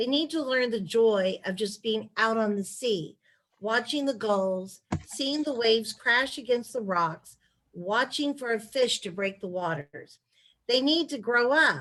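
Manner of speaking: plain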